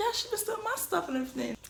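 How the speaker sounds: mock-eager, high-pitched, rattled off quickly.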